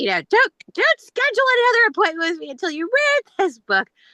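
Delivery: crass, very high, loud yelling Brooklyn woman voice.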